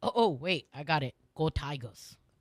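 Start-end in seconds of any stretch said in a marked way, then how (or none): 1.4-2.2 fake, put-on Louisiana Cajun accent. Joking with the others about being cajun, put-on accent. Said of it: "What accent was that".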